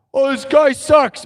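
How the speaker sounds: high, loud, jeering voice. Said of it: "like, a weirdo heckler".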